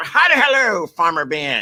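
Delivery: slow, loud, swooping, drawn-out pirate voice. Showing how the usual greeting to Farmer Ben goes: piratey voice. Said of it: "something like, uh, piratey".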